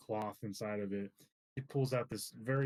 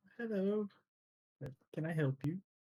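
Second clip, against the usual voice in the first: put-on high-pitched elderly old-lady voice; 8 semitones higher than usual. Narrator voices the lady behind the counter greeting customers: elderly lady voice. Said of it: "You see like an elderly lady".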